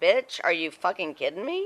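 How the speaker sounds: ordinary delivery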